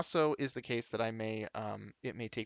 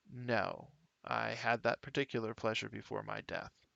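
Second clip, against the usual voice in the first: very flat, soft, toneless monotone; 6 dB quieter than usual. Narrating a game, the Revenant suddenly answers the player in a very flat voice. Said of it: "suddenly says with a very flat voice".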